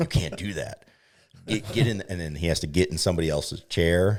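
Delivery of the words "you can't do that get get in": put-on mild yell, high and light. Retelling how people yelled at someone squatting at the tee: imitating people yelling. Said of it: "start yelling at him".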